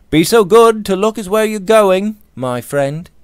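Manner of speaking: gentle, very high-pitched voice. Narrator reads a man knocked down by a rushing passenger: mildly remonstrating. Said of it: "Robert remonstrated mildly".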